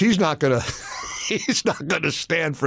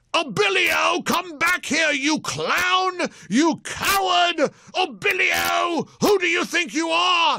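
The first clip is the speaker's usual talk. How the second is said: very high, drawn-out shriek, word stretched; 13 semitones higher than usual. Retelling what Gorka shouted in the room, imitating Gorka shrieking. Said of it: "when Gorka is shrieking".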